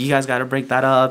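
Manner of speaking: ordinary talk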